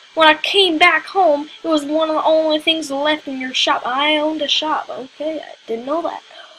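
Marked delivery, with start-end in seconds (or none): 0.2-3.9 unconvincing fake Texan accent, loud. Voicing a character who adopted a cactus from a shop, in a Texan accent. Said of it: "Why am I giving it a Texan accent?".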